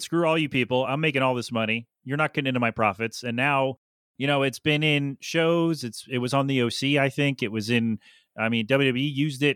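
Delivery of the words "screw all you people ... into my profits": plain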